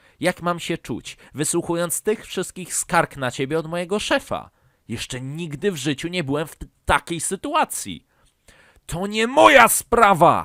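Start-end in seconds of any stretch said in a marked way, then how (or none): 8.9-10.4 very loud, high, drawn-out full-volume scream. A son answers his father's scolding about the boss's complaints, screaming. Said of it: "Wrzasnął koszmarny Karolek".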